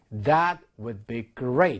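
very slow, careful, model-like reading.

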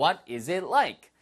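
very slow, careful, deliberate, word by word.

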